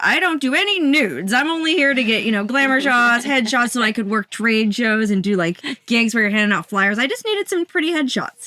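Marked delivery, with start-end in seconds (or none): none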